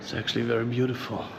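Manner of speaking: soft hushed whisper. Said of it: "I don't know why I whisper".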